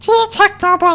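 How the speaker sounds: very high, tiny, squeaky chipmunk voice. Asked to go for full falsetto, high squeaky chipmunk voice. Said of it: "that's not even a falsetto. That's like a chipmunk".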